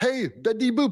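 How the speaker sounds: put-on German soldier voice. Retelling a movie scene of a captured soldier pleading: German Nazi from Saving Private Ryan. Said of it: "Remember what he said?".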